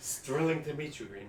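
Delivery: insincere, ironic, sarcastic tone. Greeting someone they are meeting, the speaker is sarcastic. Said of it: "I'm being sarcastic".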